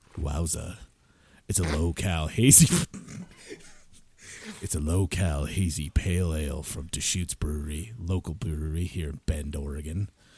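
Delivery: seductive voice, dropped very low. Speaker stops to do a bit about a local beer, in a low, sexy voice. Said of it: "I got to go back into low, sexy voice".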